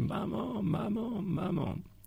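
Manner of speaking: sobbing cry, acted out. Speaker recalls crying for his mother as a small child; retelling crying out while weeping. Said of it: "à crier en pleurant de toutes mes larmes".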